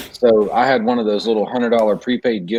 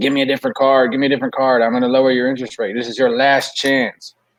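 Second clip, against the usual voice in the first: mock angry voice, pushing hard and insistent; 2 semitones higher than usual. Retelling a phone call with a caller who got mad: imitating a mad caller. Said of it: "he got so mad at me".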